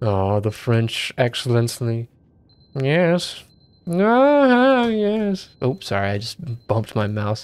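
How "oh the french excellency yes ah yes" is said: very slow scripted read, lingering words, long drawn-out ah. Repeating a game line while trying to imitate Orson Welles. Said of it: "Trying to imitate Orson Welles".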